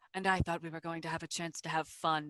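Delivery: very deep, hushed, quick bass voice. Game master voicing a caped figure whose eyes flash: very deep voice. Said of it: "a very deep voice comes through".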